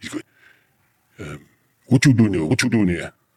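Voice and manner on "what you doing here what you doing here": put-on Kenyan English accent. Quoting what he asked the speaker after they got out of the car, Kenyan English accent. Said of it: "forgive my Kenyan English accents".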